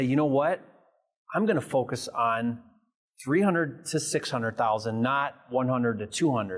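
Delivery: normal talking voice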